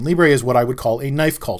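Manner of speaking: normal talking voice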